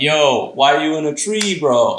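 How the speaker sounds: slow, teasing, mocking taunting tone. Retelling a cartoon scene where crows mock the elephants: imitating crows making fun. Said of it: "these crows are making fun of them".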